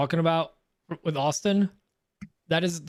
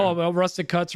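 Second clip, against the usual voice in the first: normal talking voice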